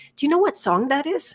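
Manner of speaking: sweet, very high, acted-out voice. Retelling reaching the front of a line and asking a man something, in a mock-sweet tone. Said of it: "I just said sweetly".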